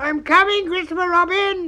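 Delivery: shrill squeal, very high and very loud. Roo calls out just before jumping, in a squeaky Roo voice. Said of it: "he squeaked out".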